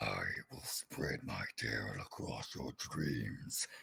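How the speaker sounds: deep, hushed demonic whispering voice. Showing how deep your voice can go, in a deep satanic voice. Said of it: "my voice can actually go as deep as a satanic sounding voice".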